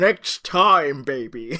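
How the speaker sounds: loud, pushed attempted American accent. Imagining Benedict Cumberbatch saying the line: Benedict Cumberbatch doing an American accent. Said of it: "Benedict Cumberbatch trying to do an American accent".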